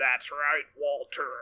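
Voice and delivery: stilted, alien-like impression. Answering a question about his voice, in a Jonathan Banks impression. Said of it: "He sounds like an alien struggling with human speech".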